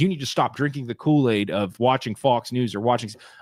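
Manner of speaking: normal talking voice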